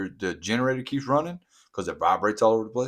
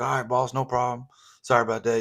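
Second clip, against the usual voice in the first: acted-out apologetic, compliant, submissive tone; 3 semitones higher than usual. Retelling how the worker answered the boss: imitating someone apologizing. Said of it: "he's apologizing".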